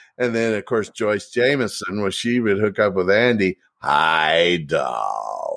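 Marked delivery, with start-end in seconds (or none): 3.8-5.6 deep, gravelly voice, stretching the word hi. Act out her greeting to Andy, in Joyce Jamison's deep, gravelly voice. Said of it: "Deep, gravelly voice".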